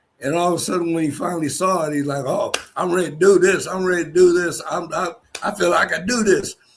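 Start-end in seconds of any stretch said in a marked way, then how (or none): 2.3-6.6 put-on Southern drawl, higher. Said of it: "how Southern that boy talked".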